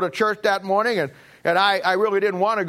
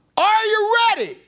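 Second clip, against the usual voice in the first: very high, thundering, booming preacher cry; 14 semitones higher, 3 dB louder than usual. Retelling how a preacher yelled out to the congregation, retelling a loud booming voice. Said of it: "loud, booming voice".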